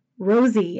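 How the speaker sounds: plain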